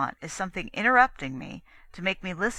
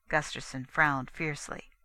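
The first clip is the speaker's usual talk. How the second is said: ordinary delivery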